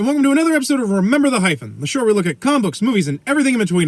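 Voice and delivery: rushed, words running together. Welcoming viewers to another episode of the show: fast, slurred delivery. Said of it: "I almost slurred those together".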